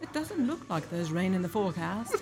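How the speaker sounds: bad Australian accent slipping toward British. Complaining that their downloaded Siri voice lies, speaker does an Australian Siri voice impression. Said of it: "I think it was more British".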